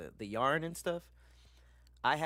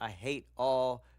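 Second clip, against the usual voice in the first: slow, loud, stretched and emphatic i hate all. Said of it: "I hate all s-".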